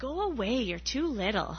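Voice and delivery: scolding, dismissive brush-off. Felix speaks to his little sister, who wants to build with him; scolding. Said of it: "Felix scolded".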